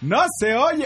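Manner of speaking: high-pitched yell from within a crowd.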